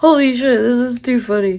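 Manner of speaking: talking through laughter. Cutting shapes for dog treats without a cookie cutter, laughing while talking. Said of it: "I can't stop laughing".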